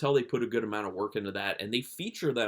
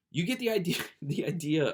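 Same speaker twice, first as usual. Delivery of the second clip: talking through giggles, pitched up; 6 semitones higher than usual. Describing a film while remembering it, laughing while talking. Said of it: "I keep laughing".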